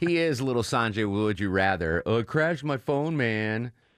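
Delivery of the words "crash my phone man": put-on California surfer accent. The speaker imitates Sanjay, as always, with a California surfer dude accent. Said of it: "I do like a California surfer dude accent".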